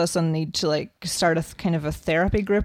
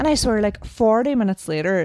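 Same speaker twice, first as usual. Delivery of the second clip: plain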